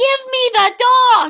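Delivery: shrill, very high, very slow, drawn-out scream. Retelling how a kid demanded someone's dog: imitating a kid screaming. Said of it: "he screams".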